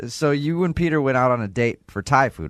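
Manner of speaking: ordinary talk, nothing marked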